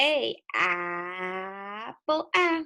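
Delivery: apple with short a sound stretched out. Showing young learners how to say the letter sound: stretched vowel sound. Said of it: "we stretch the sound".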